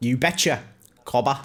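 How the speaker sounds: terrible put-on Australian accent. Joking with another speaker about impressions: terrible Australian accent. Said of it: "doing terrible Australian accents".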